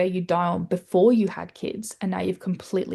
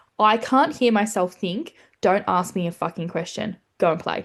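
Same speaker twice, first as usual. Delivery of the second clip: acted-out exasperated, fed-up snapping voice. Retelling what was said to a child who asked for something: retelling snapping at a child. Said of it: "just looked at him and went".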